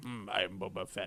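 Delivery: soft, understated, still character voice. Describing a scene from an episode, doing a Boba Fett impression. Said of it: "your impression of Boba Fett is like spot on".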